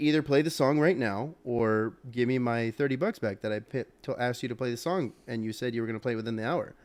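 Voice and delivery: ordinary talk, nothing marked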